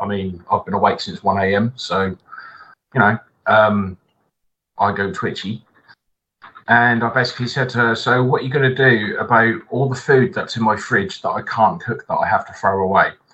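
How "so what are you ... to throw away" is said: usual speaking voice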